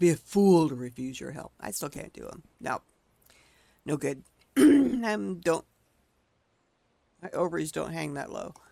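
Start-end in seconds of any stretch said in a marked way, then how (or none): 0.0-1.5 growled in a deep, low voice. Trying to do his line the way he would say it, deep growling voice. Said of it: "picture him growling that in a deep voice".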